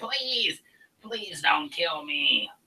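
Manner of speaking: high, pleading, begging goblin voice. Voicing a goblin on its knees, hands together: goblin begging for mercy. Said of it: "he goes down to his knees and he puts his hands together and he's like".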